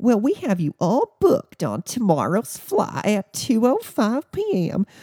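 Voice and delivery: high, swooping, irritated, forced-polite service voice. Quoting a Southwest customer service rep rebooking flights: high, irritated customer-service voice. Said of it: "in her customer service voice that was high pitch".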